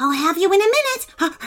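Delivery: fast, high, excited puppy bark. Narrating a wolfhound puppy chasing a house cat in circles: barked excitedly. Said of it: "barked Wolfie excitedly".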